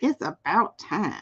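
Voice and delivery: put-on sweet, sassy, soft, cute little old lady voice. Repeating a voice the speaker heard, like their grandmother's, in a cute old woman voice. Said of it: "she just like got that cute voice".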